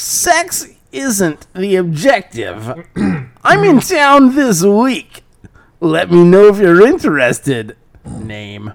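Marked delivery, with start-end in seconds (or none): 0.0-7.8 put-on weird, creepy voice, higher and louder. Reading a creepy message aloud, mimicking Captain Awesome. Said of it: "mimic Captain Awesome as close as I can".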